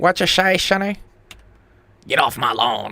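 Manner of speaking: put-on old grandpa voice. Responding to the other speaker calling himself Gramps, doing an old man voice. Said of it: "I am Gramps".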